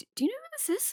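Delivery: whispering in a high voice. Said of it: "and whisper".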